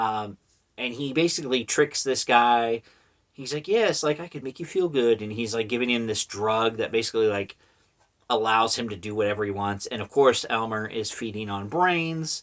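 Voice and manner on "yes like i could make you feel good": smooth, coaxing voice with 1950s charm. Retelling how the creature tricks the guy: smooth 1950s-style Elmer voice. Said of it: "really smooth".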